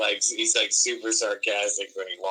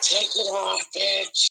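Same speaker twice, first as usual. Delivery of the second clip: very high-pitched voice; 11 semitones higher than usual. Joking about Gilbert Gottfried in Vegas: Gilbert Gottfried voice. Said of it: "Gilbert Godfrey takes Vegas".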